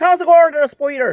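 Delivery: put-on very high, loud voice with strong Dublin accent. Quoting an Irish musician greeting the speaker as Spider, in a strong Dublin accent. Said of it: "really like strong Dublin accent".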